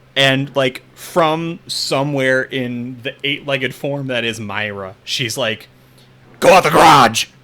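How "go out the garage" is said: very loud, harsh, barking delivery. Voicing a spider creature ordering the players out: barking a command. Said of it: "she just barks out".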